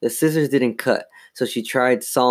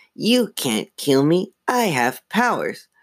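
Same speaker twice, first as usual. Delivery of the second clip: rasping ventriloquist-dummy voice, high and slow; 5 semitones higher than usual. Reading a story aloud, voice a living dummy defying the sisters who hold him, rasping. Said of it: "He blinked again. He giggled. His mouth open, making his grin grow wider. He tried to tug out of [name]'s grasp, but she hung on without even realizing she was holding him. "But you're a dummy," she squealed. He giggled".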